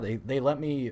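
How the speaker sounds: voice cracking and breaking. Speaker tells how they were allowed a YouTube channel, voice cracking. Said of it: "voice crack, voice crack".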